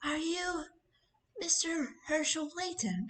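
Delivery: put-on high-pitched young woman's character voice. Acting out a scene, the speaker voices a woman asking a question, doing her voice. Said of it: "I have to do her voice well".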